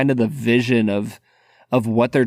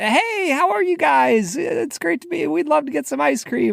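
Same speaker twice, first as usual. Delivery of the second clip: mock bright, very high, sweet, sugary, cheery voice. Retelling how she greeted people on walking in for ice cream, imitating her cheerful sweet voice. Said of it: "Like the nicest, happiest human being".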